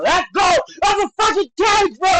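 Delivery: high, drawn-out furious angry yell. Speaker watching a fight, reacting to a fighter holding the cage, with an angry shout.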